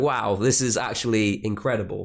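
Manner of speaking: plain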